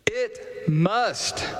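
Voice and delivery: "must" stressed, leaned on with weight. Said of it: "emphasis on must".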